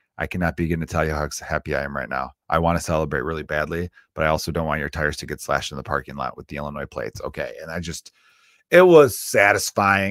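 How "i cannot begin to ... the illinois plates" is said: whisper, lower and faster. Recounting what they whispered to someone at a 49ers game, retelling a whisper. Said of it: "I like whispered over to Michael Myers".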